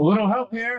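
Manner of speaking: shrill, high, shouted cry. Voicing Lysander as he fights the toads: yelling for help. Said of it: "he yells".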